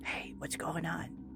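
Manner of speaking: breathy, very quiet, barely audible whisper. Speaker repeating a greeting, now in a whisper. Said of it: "can I whisper too?".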